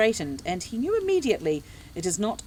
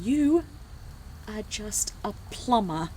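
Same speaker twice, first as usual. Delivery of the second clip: spoken through gritted, clenched teeth; 2 semitones higher than usual. Narrator voicing a woman speaking to a man, through gritted teeth. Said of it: "she says through gritted teeth".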